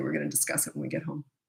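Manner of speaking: soft, hushed, near-whisper voice.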